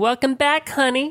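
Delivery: very high-pitched put-on voice. Retelling what a card dealer said on sitting down: Harley Quinn voice. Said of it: "she sounded like, like Harley Quinn".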